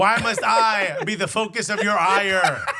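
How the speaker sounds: slow, loud, mock wounded lament.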